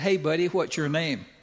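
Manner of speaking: ordinary delivery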